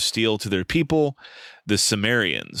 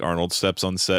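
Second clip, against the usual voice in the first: normal talking voice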